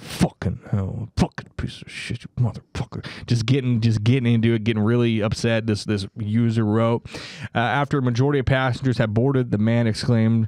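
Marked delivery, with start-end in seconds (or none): 0.0-3.0 put-on muttered grumbling, quieter and lower. Retelling a user's story of a man on a plane, mimicking muttered grumbling. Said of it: "grumbling under his breath".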